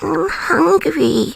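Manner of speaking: cute, high-pitched, creaky, rough voice. Doing, when asked, the voice used with a husband to be cute: Labubu voice. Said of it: "it's my Labubu voice".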